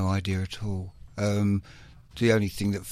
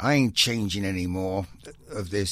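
rough, poor fake American accent. Recalling a dispute over a live album, quoting Nevo in a bad American accent. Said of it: "Bad American accent".

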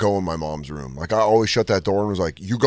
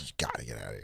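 barely voiced, very quiet breathy whisper; 10 semitones lower, 20 dB quieter than usual. Retelling what he told a man who came by to scare him, retelling a whisper. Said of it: "Why were you whispering?".

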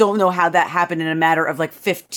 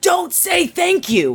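put-on very high, very slow child's scream; 12 semitones higher than usual. Retelling how her four-year-old answers her: imitating a child screaming. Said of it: "now screams back at me".

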